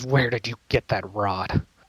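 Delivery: hostile, nasty, angry snarling tone. Voicing an angry character who demands where a rod came from: nasty angry tone. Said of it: "He gets really nasty, and he says".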